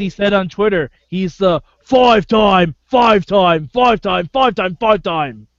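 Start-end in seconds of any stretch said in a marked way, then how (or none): 1.1-5.3 put-on British wrestler accent, louder. Quoting a wrestler's tweet about being five-time champion: Bad News Barrett accent. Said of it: "how you tweet that accent".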